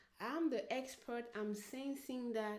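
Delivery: ordinary delivery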